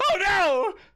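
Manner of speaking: alarmed, flinching, very high-pitched startled cry. Voicing a flinching comedian character startled by a hiss: flinching NPC crying out in alarm. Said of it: "he flinches and he goes".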